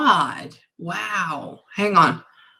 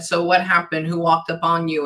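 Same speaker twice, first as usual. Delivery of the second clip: usual speaking voice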